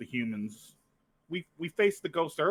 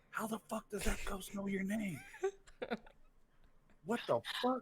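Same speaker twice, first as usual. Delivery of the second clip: soft, whispered aside; 7 semitones higher, 9 dB quieter than usual. Speaker recounting a private remark made to Nix, whispering. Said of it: "I'm gonna whisper to Nix".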